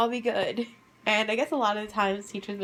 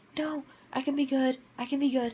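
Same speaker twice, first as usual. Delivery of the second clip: put-on whisper, higher; 4 semitones higher than usual. Retelling own words to a teacher in class: imitating own past whisper. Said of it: "I was, like, whispering to her".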